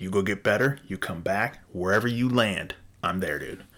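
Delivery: ordinary talk, nothing marked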